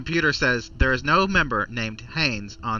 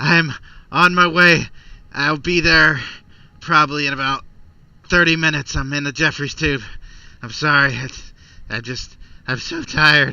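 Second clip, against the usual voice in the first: loud, winded, heavy panting between words; 3 semitones higher, 8 dB louder than usual. Voicing a crew member answering a call: heavy panting. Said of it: "You hear a lot of heavy panting, and he says".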